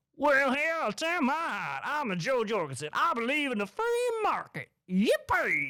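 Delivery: very high, swooping, bouncy cartoon walrus voice. Mocking a candidate you can't vote for, play Jo Jorgensen as a cartoon walrus.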